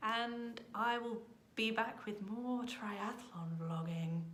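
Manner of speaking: odd, affected, slow, weird put-on voice. Signing off and promising more triathlon vlogging: weird voice. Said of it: "I had to do that in that weird voice".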